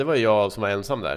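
ordinary talk, nothing marked

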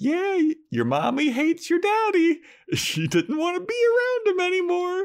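put-on very high, swooping baby talk. Acting out someone's line in a baby-talk exchange, in baby talk voice. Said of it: "they're like baby talking".

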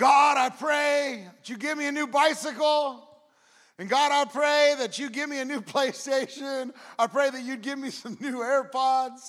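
loud, high shouting at the top of lungs. Retelling a joke about a boy praying before bed: imitating a boy shouting a prayer. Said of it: "praying at the top of his lungs".

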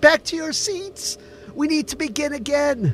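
very high-pitched pleading call. Ellie calls the crowd away from the food line, pleading. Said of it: "she pleaded".

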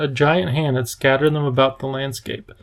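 plain reading voice

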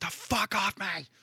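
put-on, long, very high, drawn-out shriek. Retelling screaming from the kitchen after tasting own cooking: imitating own screaming. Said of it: "you just hear me screaming from the kitchen".

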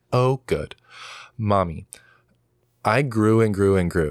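put-on voice like a three-year-old child. Father retelling what his three-year-old daughter said, imitating a three-year-old daughter. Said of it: "she's speaking like this at three years old".

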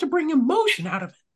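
very high, squeaky cartoon voice. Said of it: "I sounded like Mickey Mouse there".

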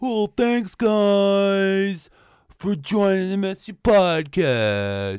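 very loud, booming, very slow, drawn-out sing-song. Imitating how a co-host said the podcast outro: imitating Mark's outro delivery. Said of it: "yours was like".

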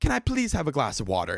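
put-on, broken, non-native foreign-accented English. Retelling a passenger's request to the flight attendant, imitating a non-native English accent. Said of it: "with her accent".

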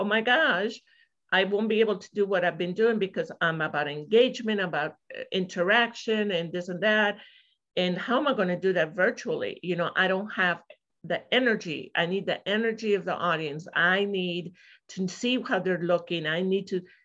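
ordinary talk

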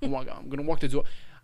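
fake-sounding New York accent.

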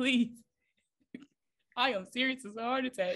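talking through laughter. Insisting the listeners pray for her, laughing while talking. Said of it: "I'm laughing".

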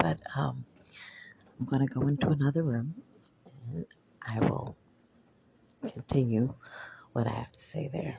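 speaking quietly. Speaker keeps voice down because people are working in the background: speaking quietly. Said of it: "I'm being low in voice right now because I'm somewhere where I can't speak loud".

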